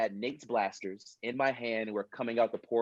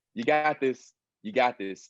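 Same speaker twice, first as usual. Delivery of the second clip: put-on anxious voice, louder; 4 dB louder than usual. Retelling an anxiety attack during a take: imitating own anxious self pep-talk. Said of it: "literally had almost an anxiety attack".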